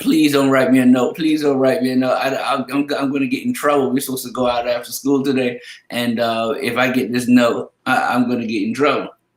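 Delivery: tearful, stammering, crying, pleading tone. Retelling a student begging not to get a note home; imitating crying pleading. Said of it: "she bust out crying".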